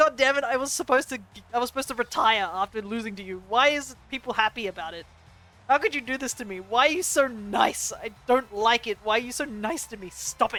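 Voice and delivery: mock furious rant, loud and angry. Retelling how a game character reacts after losing: imitating an angry character. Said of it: "he gets angry. He's like".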